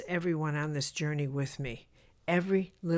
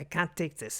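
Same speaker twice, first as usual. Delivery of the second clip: put-on German accent. Retelling what a woman said on stage at a nearly empty opening night: German accent. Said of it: "in her German accent".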